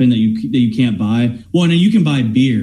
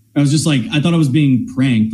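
ordinary delivery

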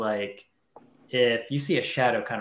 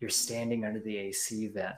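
soft, quiet half-whispered aside; 6 dB quieter than usual. Retelling what one man half-whispered to another, half-whispering. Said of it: "And he whispers to him".

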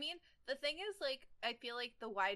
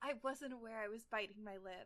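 soft murmur, quieter; 5 dB quieter than usual. Reading the heroine's line aloud in a romance scene: murmured softly. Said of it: "I murmur softly".

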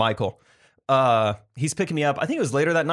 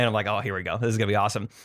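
ordinary talk, nothing marked

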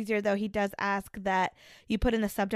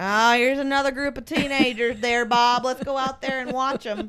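loud, over-the-top put-on Wisconsin accent; 4 semitones higher, 7 dB louder than usual. Playing a porch-sitter watching teenagers in a skit, in an exaggerated fake Wisconsin accent. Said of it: "I bet you do not talk like that at all".

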